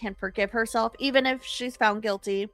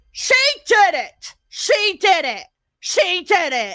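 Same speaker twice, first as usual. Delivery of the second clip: very loud, high yell, swelling and climbing each repeat; 9 semitones higher, 9 dB louder than usual. Retelling a scary moment when a coworker kept raising his voice, imitating him yelling. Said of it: "he was like raising his voice more and more".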